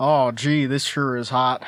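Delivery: slow, drawn-out put-on southern accent. Imitating him after eating a hot chip: imitating a southern accent. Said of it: "He suddenly has a southern accent".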